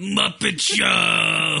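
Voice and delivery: rough, creaky character voice. Describing a DVD menu segment, imitating Animal: Animal voice. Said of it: "Just Animal looking at you going".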